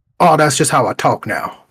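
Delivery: put-on heavy Southern accent. Retelling a friend's greeting after college: imitating a thick Southern accent. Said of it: "a super thick Southern accent".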